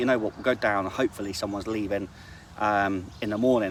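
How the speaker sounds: normal talking voice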